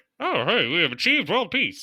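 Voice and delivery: 1950s-style newsreel announcer voice. Imitating an old news broadcast: 1950s newsreel announcer voice. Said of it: "the nineteen fifties voice".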